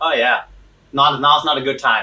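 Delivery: ordinary talk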